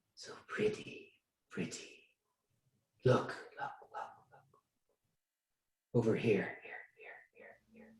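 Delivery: eerie, echoing whisper. Voicing voices in the trees calling to a player: echoing whisper. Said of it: "an echoing whisper through the trees".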